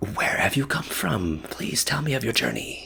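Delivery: careful, civil half-whisper, pitched a touch high. In a tabletop game, a character asks a newcomer about their journey, half-whispering. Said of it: "in a whispering voice".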